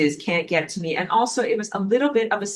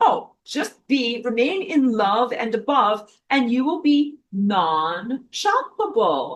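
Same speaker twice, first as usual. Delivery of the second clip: put-on airy, breezy, sarcastic sing-song, swooping pitch; 4 semitones higher than usual. Quoting own past advice mockingly: imitating own blithe past advice. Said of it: "blithely saying".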